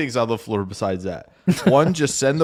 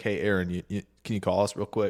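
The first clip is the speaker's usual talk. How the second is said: put-on calm voice, much quieter and faster; 9 dB quieter than usual. Recounting a general manager's phone request, imitating Goody's very calm voice. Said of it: "in like the calmest way".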